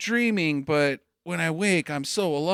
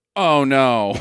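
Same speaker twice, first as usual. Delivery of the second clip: loud, flat, badly acted delivery; 5 semitones lower, 8 dB louder than usual. Imitating the actor's line from the movie: Neil Breen's bad flat acting. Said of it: "I can't even do it as bad".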